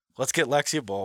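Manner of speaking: plain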